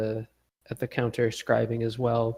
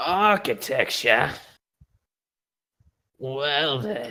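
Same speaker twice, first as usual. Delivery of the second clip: heavy, wheezing, drawling voice; 3 semitones higher, 4 dB louder than usual. Retelling what a woman said when asked for architecture books, in her smoker's voice. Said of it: "She's got this like smoker's voice".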